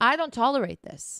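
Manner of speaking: ordinary talk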